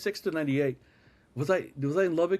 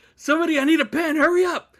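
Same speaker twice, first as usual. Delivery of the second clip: play-acted frantic yell, very high and very loud; 10 semitones higher, 9 dB louder than usual. Retelling a scramble for a pen for a signature, imitating someone freaking out. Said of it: "Doug is freaking out".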